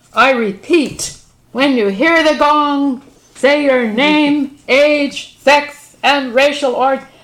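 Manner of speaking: very loud, slow, high-pitched announcing delivery.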